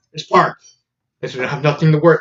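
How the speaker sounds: ordinary talk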